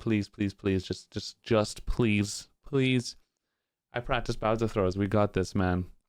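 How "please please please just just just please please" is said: put-on begging tone, lower. Retelling inner thoughts going into Bowser throws: imitating own begging. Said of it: "I was kind of begging".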